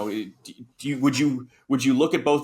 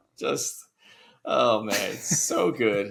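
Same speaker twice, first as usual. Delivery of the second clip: plain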